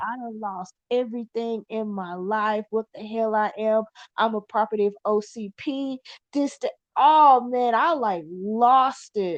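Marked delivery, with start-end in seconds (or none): none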